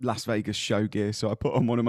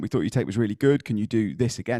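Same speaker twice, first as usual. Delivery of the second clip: normal talking voice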